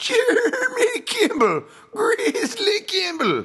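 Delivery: put-on very high, sing-song, swooping old prospector voice. Podcast host naming a fighter: prospector voice. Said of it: "I use the prospector voice anytime I say Jeremy Grizzly Kimball".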